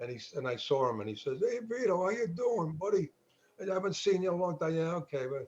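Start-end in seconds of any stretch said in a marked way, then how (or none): 1.4-4.8 higher-pitched New York mobster wise guy voice. Recounting a family guy just out of jail greeting the speaker, wise guy voice. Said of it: "the wise guy voice".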